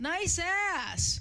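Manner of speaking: play-acted loud, high yell, "ass" drawn out. Telling how a guy yelled at a friend downtown, retelling a yelled catcall. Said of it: "this guy yells out".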